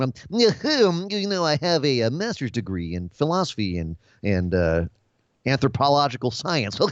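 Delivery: nerdy voice with you drawn out. Describing a wrestling gimmick on AEW, the speaker mimics him in a Luchasaurus nerd voice. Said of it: "he literally sounds like me doing my nerd impression".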